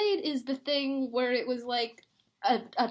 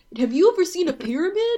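put-on crazy-sounding kid voice, higher and louder; 5 semitones higher, 8 dB louder than usual. Mocking the voice of Gabe, the episode's character: imitating Gabe's crazy voice. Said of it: "Why does he sound like that?".

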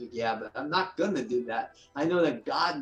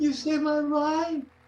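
amazed tone, higher and louder; 5 dB louder than usual. Retelling what a woman at a show said on learning who he was: imitating her amazed exclamation. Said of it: "in that kind of tone".

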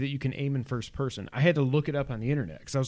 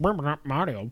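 put-on robot helper voice. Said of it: "talks exactly like Mario".

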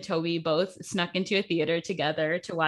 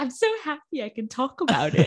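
poor put-on British accent, sing-song; 7 semitones higher than usual. Quoting what he keeps saying in videos about the movie, in a bad British accent. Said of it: "That was my British accent".

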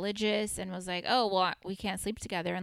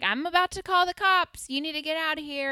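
mock, loud, high-pitched yell; 9 semitones higher, 6 dB louder than usual. Retelling how a friend's mom yelled at the speaker; retelling a yell. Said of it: "the friend's mom is yelling at me like".

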